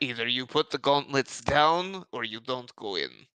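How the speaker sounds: put-on Russian accent in an orc voice. Voicing an orc who demands the gauntlets be put down: Russian accent orc voice. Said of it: "Your accent".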